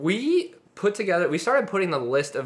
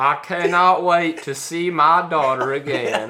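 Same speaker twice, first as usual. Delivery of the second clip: put-on southern Alabama accent, louder; 2 semitones higher, 7 dB louder than usual. Quoting a line from the movie Con Air: Nicolas Cage Alabama accent. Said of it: "why is Nicolas Cage from Alabama and why does he talk like this".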